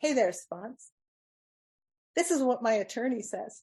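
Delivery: acted smug, self-satisfied, vindicated, superior tone. Retelling going back to the sponsor: imitating own smugly superior tone. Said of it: "I go smugly superior".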